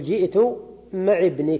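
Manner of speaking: ordinary delivery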